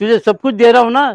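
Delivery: loud, insistent, pushy coaxing tone.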